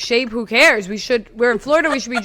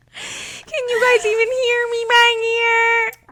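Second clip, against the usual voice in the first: put-on very high, childlike little-kid voice calling out; 13 semitones higher than usual. Recalling being in turmoil, the speaker quotes themselves in a little kid voice. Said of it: "you just sound like a little kid".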